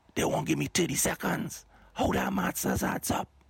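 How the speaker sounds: whispering. Host of a weekly segment complaining about time pressure, whispering. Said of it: "I whispering this week".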